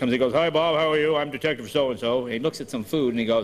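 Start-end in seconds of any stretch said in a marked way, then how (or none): 0.3-2.2 English speaker's obvious fake American accent. Recalling a tv detective show, mimicking an english actor's fake american accent. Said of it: "this guy was obviously an Englishman doing American".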